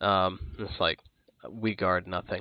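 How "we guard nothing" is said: very soft, quiet, low, dry, dusty, ringing voice. Asked what it guards, a voice answers from inside a helmet: dry, dusty voice, soft. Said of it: "this dry, dusty voice just kind of ring out softly".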